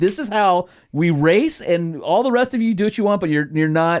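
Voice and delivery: affronted and defensive. Retelling how a grandpa refused a full face helmet: imitating someone indignant. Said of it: "he was, like, indignant about it".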